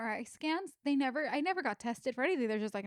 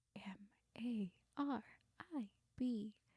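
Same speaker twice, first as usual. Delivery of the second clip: slow whisper, quieter; 3 semitones lower, 10 dB quieter than usual. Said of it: "whispering to her".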